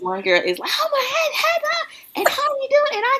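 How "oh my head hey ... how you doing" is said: mock very high, perky, bubbly voice. Imitating one girl's early morning greeting: imitating a bubbly greeting. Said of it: "How in the world nine o'clock you so bubbly?".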